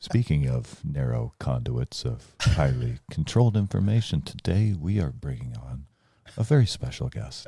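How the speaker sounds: put-on calm, slow, mellow, soothing documentary-host voice. Showing how PBS shows talk: put-on mellow soothing PBS voice. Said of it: "they like to talk like this".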